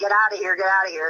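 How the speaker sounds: usual speaking voice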